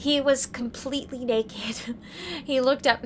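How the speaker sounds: words broken up by laughing. Reading a story aloud, laughing while reading. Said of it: "Sorry, I'm laughing".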